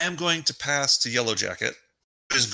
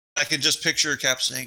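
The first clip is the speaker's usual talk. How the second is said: normal talking voice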